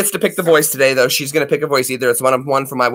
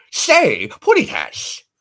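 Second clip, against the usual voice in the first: high, pitched-up, put-on cartoon voice; 8 semitones higher than usual. Doing cartoon voices, announcing Sylvester: Sylvester voice.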